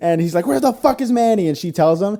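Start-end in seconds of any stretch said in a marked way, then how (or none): 0.5-1.5 high, put-on yell at full volume. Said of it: "he yells".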